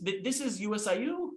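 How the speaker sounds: uptalk, pitch rising on the final U. Warning that going up sounds unconfident: rising pitch on final U. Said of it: "it's going up at the end of a statement".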